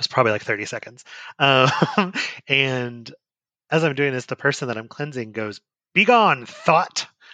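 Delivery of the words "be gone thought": high, very commanding, authoritative tone. Retelling what the person being cleansed said, imitating an authoritative tone. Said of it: "with like the like most authoritative tone ever".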